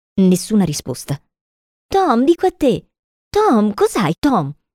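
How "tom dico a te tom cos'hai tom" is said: worried, anxious, pitched-up, raised voice. Sid shakes tom, who keeps groaning, and questions him, anxious. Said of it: "lo guardò ansiosamente in faccia".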